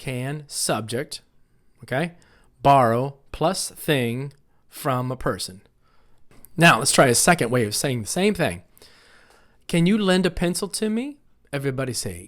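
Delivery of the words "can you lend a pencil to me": voice lifts at the end, rising on me. Speaker models a yes-no question for the class, rising at the end. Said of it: "Notice how my voice kind of goes up at the end?".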